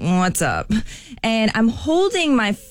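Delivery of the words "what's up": mock irritated, unwelcoming, annoyed tone. Retelling answering a stranger on the street: imitating own annoyed voice. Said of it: "I could tell in my voice I sounded annoyed".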